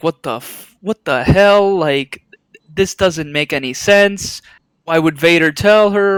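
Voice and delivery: ordinary talk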